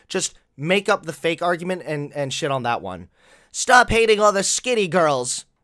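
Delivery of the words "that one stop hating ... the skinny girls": ordinary talk, nothing marked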